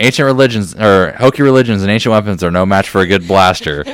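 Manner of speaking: usual speaking voice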